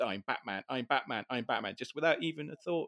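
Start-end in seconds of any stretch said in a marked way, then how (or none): none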